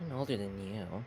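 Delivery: muttering. Acting out a scene, the speaker voices a woman's aside while she keeps reading, muttered. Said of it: "she she mutters".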